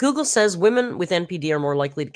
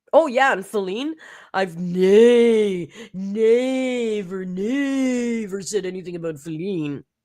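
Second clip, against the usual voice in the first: weird, high voice with nay stretched long; 5 semitones higher than usual. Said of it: "She's making this really weird voice".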